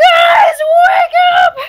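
high, loud panicked scream at full volume. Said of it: "she's probably immediately gonna scream".

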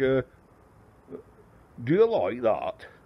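put-on slow Lancashire accent. Speaker quotes a man from Lancashire, doing a Fred Dibnah Lancashire accent. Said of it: "he's from Lancashire, and he'll say".

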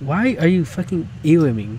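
ordinary talk

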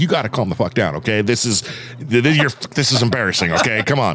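ordinary talk

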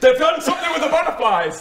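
very high, frantic, panicked put-on shout. A tabletop player voices his character alerting everyone, shouting in character. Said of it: "And then I start going".

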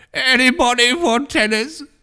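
strange, very high, hollow shriek-groan. Narrator reads a young man calling out, in a hollow half-shriek, half-groan. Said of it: "In a queer, hollow tone, half shriek and half groan".

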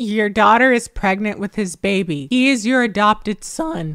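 normal talking voice

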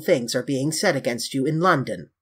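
usual speaking voice

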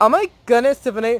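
put-on Valley Girl voice. Showing one of two character voices made for a contest, Valley Girl character voice. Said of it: "my 2 Valley Girl character voices".

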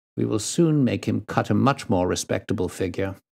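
plain reading voice

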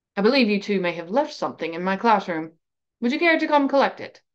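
ordinary delivery, nothing marked

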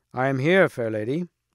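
plain reading voice

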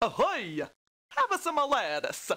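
put-on Portuguese accent, pitched way up. Telling how Christopher Columbus brought lettuce to America, voicing him in a bad Portuguese accent. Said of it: "the worst Portuguese accent I've ever fucking heard".

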